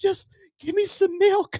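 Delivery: very high, pleading, begging voice. Retelling an inmate on the restraint bed begging: imitating pleading. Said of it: "He's pleading".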